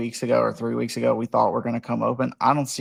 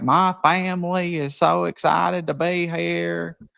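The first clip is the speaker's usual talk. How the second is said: fake Southern accent, pitched higher; 7 semitones higher than usual. Retelling his introduction at a basketball game, in John's fake Southern accent. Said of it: "put on this fake ass Southern accent".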